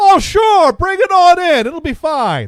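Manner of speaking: put-on loud, high-pitched Maine accent. Retelling a phone call, act out the guy's reply in a Maine accent. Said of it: "With that Maine accent".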